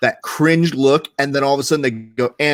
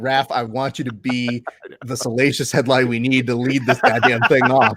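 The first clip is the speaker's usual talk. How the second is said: ordinary talk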